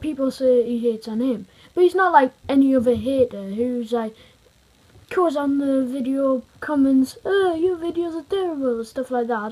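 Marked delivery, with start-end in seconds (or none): 7.2-9.5 sudden put-on Italian accent, pitched up. Speaker mimics a typical hater's video comment in an Italian accent. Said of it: "Don't know why I did that in an Italian accent".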